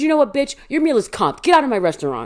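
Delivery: acted angry scolding, loud and high-pitched. Retelling how the manager threw someone out, imitating her loud telling-off. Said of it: "I can hear Leah because she's loud".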